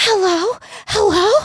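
frantic, very high-pitched call. Retelling how a woman greeted her, imitating a frantic woman. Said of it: "I have to impersonate her though".

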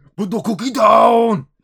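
very loud, high, put-on Austrian action-hero accent. Joking that the creature could mimic voices, speaking like Arnie. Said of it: "It's going to start speaking like Arnie".

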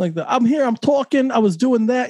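exaggerated Brooklyn accent. Describing how a man talks, mimicking him in an exaggerated old brooklyn accent. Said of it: "very like old Brooklyn".

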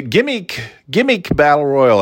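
overdone, high voice with big swoops. Naming a gimmick battle royal: terrible Mean Gene impression. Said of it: "I do a terrible Mean Gene".

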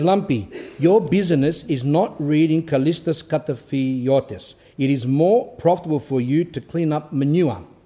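plain

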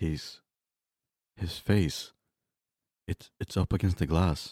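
halting, stumbling, broken phrases. Acting a caller on an emergency line, watching a figure outside: speaking too quietly. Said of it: "you're gonna have to speak up".

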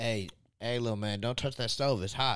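ordinary talk

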